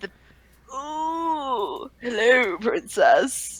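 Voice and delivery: very low, oily, slimy, drawn-out voice. Imitating the red guy heard at the start of the game, in a slimy voice. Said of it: "that really slimy voice".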